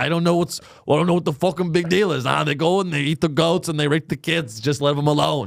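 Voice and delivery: imitated New Jersey accent. Mocking a witness interviewed on the news: imitating a New Jersey guy. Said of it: "He's like a New Jersey asshole".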